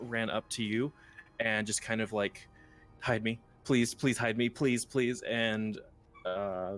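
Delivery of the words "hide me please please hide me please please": distressed, desperate, fast, frantic pleading tone. Recapping a scene, voicing a young half-elven woman fleeing guards: distressed pleading woman. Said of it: "a very distressed young half-elven woman".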